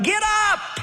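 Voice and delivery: high-pitched yelling.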